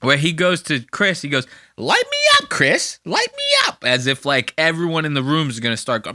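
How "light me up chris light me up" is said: very high joking voice swooping around. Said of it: "he'll go real high with it like this".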